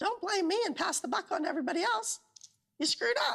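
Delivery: put-on squeaky cartoon mouse. In a favorite video clip being shared, someone speaks in a Mickey Mouse voice. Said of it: "What's with the damn Mickey Mouse voice?".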